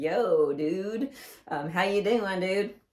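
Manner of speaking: slow, stretched-out, easy, laid-back surfer-dude drawl. Speaker describes the main sea turtle and quotes him: Crush surfer-dude voice. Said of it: "he's like a surfer dude".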